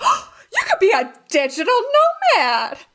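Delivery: very high, swooping, thrilled super-excited voice. Retelling what an acquaintance said about remote work: imitating someone super excited. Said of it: "she said it just like that, like, super excited".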